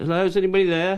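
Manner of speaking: mock very high, loud shouted call-out. Retelling calling into the empty kitchens: imitating a shout. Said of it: "and I shout".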